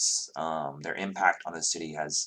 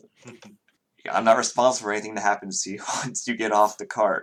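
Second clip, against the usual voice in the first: fast, laughing, dismissive brush-off. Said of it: "They shrug and say".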